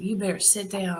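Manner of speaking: put-on heavy, thick, laid-on Texas accent. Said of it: "with this real thick accent".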